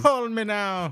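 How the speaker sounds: very high, laid-on fake Jamaican accent. Joking with others about a phone psychic's free readings, in a Miss Cleo fake Jamaican accent. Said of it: "fake Jamaican accent".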